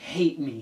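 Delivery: mock pissed-off, angry delivery. Retelling a girl's reply to her boyfriend: imitating someone pissed off. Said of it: "pissed off".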